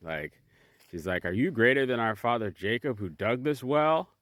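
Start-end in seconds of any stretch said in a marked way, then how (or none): 1.2-4.0 offended, indignant, affronted tone. Retelling her question at the well: imitating an offended tone. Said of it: "now she's offended".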